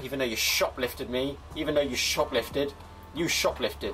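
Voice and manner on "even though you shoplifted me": ordinary talk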